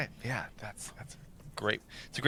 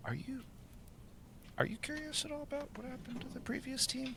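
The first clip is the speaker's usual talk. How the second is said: very soft, very high-pitched hushed half-whisper; 13 dB quieter than usual. Playing a character who leans in during a shared read: half-whispering. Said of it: "kinda whispers".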